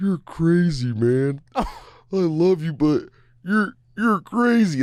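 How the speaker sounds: slow, high-pitched, dazed, dopey, drugged-sounding drawn-out drawl. Speaker recalls a movie scene where a character gets tranquilized, in a Will Ferrell impression. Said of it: "Like I used to do Will Ferrell".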